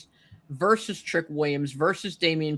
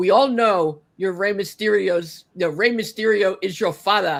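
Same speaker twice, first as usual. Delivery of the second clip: put-on slight Nigerian accent, raised voice, loud; 3 semitones higher, 5 dB louder than usual. Retelling what Obafemi said to him, do Obafemi's Nigerian accent. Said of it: "with his little Nigerian accent".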